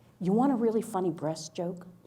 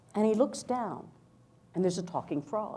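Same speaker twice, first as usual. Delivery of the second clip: normal talking voice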